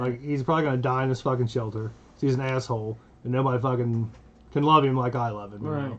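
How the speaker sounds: normal talking voice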